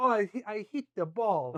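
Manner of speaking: dainty put-on Serbian accent. Joking with friends about tennis players, do a Novak Djokovic impression with a Serbian accent. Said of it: "Great Serbian accent".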